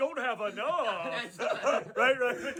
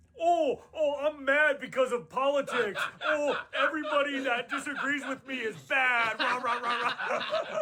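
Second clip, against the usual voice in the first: ordinary talk, nothing marked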